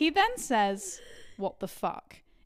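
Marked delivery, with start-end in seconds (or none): 1.4-2.2 mock confused voice, quieter. Retelling what a man said as he looked down at her, imitating his genuine confusion. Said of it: "in a genuinely confused tone".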